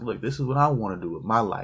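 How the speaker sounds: normal talking voice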